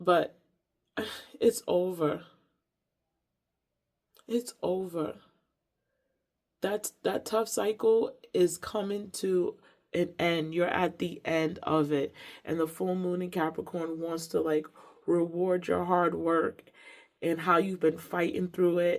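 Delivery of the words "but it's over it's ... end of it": drawn-out crying, tearful and relieved. Giving a full moon reading to listeners, crying with relief. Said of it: "I'm crying out of like relief and release".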